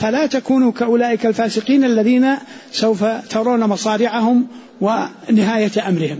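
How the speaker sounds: ordinary delivery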